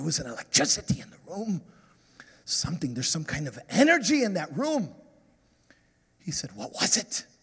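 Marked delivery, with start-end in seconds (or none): 0.0-1.6 put-on passionate, fervent delivery. Quoting what he said to the dancers, with passion. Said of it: "He said it like that, that passion".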